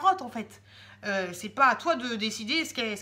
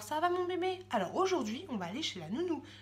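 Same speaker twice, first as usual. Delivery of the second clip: put-on gentle, sweet, silly, soft, high baby talk; 5 semitones higher, 6 dB quieter than usual. Showing how she talks to her little girl, softer, gentle tone. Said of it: "Je lui parle avec un ton un petit peu plus doux qu'à la normale".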